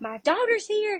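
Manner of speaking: put-on, high-pitched screaming cry. Retelling a grandmother's nine one one call: imitating someone screaming. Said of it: "she was screaming in that nine one one call".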